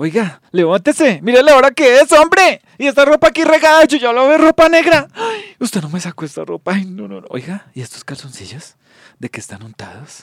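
very high, very loud, shrill, swooping nagging scolding. Showing how he first acted out the mom character scolding over dirty clothes: acting as his scolding mom. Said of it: "ya empecé a ensayar ya con el saco puesto y la peluca".

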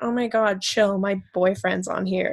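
ordinary delivery

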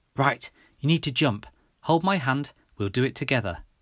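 plain

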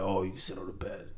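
deep, very low, very soft, hushed put-on woman's voice. Telling a story to friends, the speaker does a woman's line; put-on deeper voice for her. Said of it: "I'm going to do her voice like a deeper voice".

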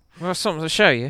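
put-on Australian accent, high and loud. Imitating an australian listener showing the show to friends: put-on australian accent. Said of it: "tell if this is a good accent or not".

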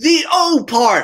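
very high, shrill, loud shout. Retelling answering a teacher across the classroom, retelling own shout back. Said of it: "And I shout back".

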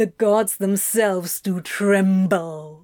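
contemptuous, scornful, sneering mockery. A demon answers the friend who is petting him, sneering. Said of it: "he sneered".

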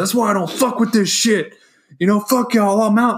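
high, loud ranting yell. Retelling what someone yelled after flipping a Ouija board: imitating someone yelling. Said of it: "he got up and he started yelling".

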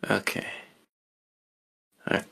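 disappointed voice. Answering another speaker who says the show never popped: disappointed voice. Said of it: "Disappointment in his voice".

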